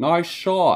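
put-on very high, shrill, loud, poor British accent. Complaining about an opponent in a fight, mimicking his taunt in a British accent. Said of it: "he says something with that shitty British accent".

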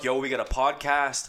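ordinary talk

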